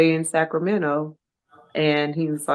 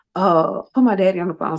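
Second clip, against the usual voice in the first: talking fast, rushed and raised; 3 semitones higher, 5 dB louder than usual. A mother retells her son's late-night call, imitating fast talking. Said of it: "talking kind of fast".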